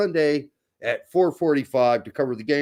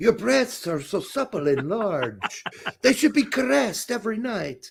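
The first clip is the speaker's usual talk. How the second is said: put-on French accent, pitched up; 7 semitones higher than usual. Performing a bit for the other speaker, put-on French accent. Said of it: "You're doing a French accent".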